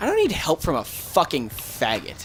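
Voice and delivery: ordinary delivery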